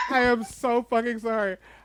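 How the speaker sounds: speaking through laughter. Apologizing after a shocking story ending, laughing while apologizing. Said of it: "I don't mean to laugh".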